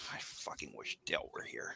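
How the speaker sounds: barely voiced, whispered grumbling mutter under the breath. In character, grumbling that Dale is absent: muttering under breath. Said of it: "I mutter under my breath".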